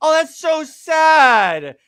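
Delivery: very slow, syrupy, high, loud sarcastic mock sympathy. Acting out a planned tweet at a writer whose book gets canceled: sarcastic mock sympathy. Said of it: "the most sarcastic gif I can".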